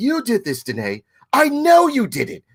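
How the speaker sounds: very high cartoon voice with swooping, swinging pitch. Retelling a teacher's accusation: Stewie Griffin voice.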